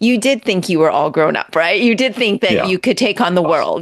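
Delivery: plain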